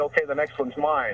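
ordinary talk

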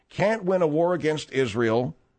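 normal talking voice

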